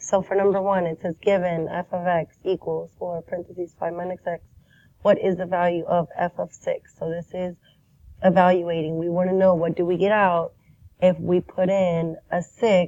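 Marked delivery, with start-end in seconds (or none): none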